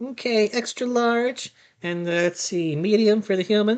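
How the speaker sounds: pixie voice, sizing up, shopkeeper-like. Voicing a pixie quartermaster greeting the party: pixie quartermaster voice. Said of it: "A pixie".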